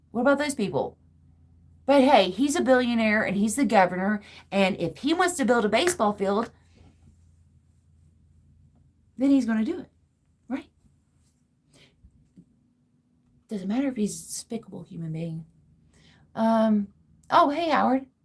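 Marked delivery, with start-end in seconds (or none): 1.8-15.4 lightly sarcastic tone, a hint of sarcasm. Complaining about a billionaire governor building a baseball field: sarcastic tone. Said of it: "I'm detecting a hint of sarcasm".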